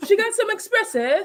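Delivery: put-on poor British accent. Repeating a friend's coffee order jokingly: bad British accent. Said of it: "I could never do a British accent".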